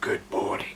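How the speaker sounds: barely attempted, half-hearted deep voice. Retelling what a dinosaur toy once said one morning: imitating a really deep voice. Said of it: "in a really, really deep voice".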